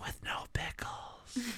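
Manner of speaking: hushed, barely voiced, very quiet whisper. Playing a say-then-whisper game, ordering at McDonald's: whispering. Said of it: "when I whispered".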